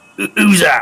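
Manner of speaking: very high, loud, rough, gruff call. Playing a voice calling out over the wind in the dark, gruff voice. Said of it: "you just hear this gruff voice go".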